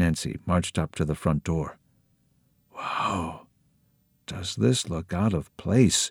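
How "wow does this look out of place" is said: hushed, secretive whisper. Nancy marches up to the front door and whispers; whispered. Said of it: "she whispered".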